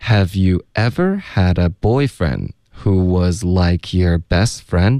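slow, careful read of the full line.

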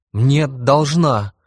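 sudden, high, loud protesting outburst. A child protests when his father questions him: cried out. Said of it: "вскрикнул я".

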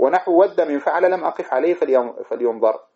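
ordinary talk

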